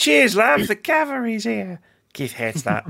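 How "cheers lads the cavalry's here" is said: put-on British accent, pitched high. Recalling a voice line he spammed while playing Overwatch: Tracer voice line impression. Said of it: "that voice line for Tracer".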